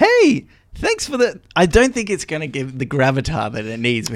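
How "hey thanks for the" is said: very high, put-on voice. Asked to do different voices to tell characters apart, the speaker goes higher-pitched. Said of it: "I went higher".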